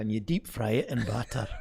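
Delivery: put-on Scottish accent.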